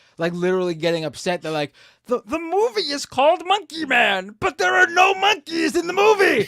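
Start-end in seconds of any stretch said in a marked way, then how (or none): 2.1-6.5 high, slow, shouted put-on impression voice. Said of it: "I just sounded like Pee Wee Herman a little bit there".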